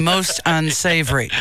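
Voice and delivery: ordinary talk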